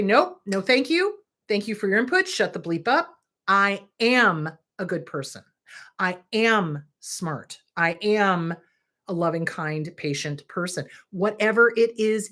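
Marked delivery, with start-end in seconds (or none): none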